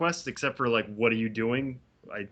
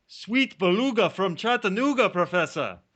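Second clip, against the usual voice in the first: put-on Jamaican accent throughout, pitched high; 7 semitones higher than usual. Speaker performs a new impression for the other host, in a Jamaican accent. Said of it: "so this is a Jamaican accent".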